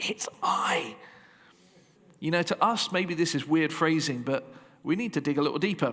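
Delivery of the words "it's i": theatrical, pitched-up stage whisper. Showing different ways to read a line, saying it as a stage whisper. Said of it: "like a stage whisper".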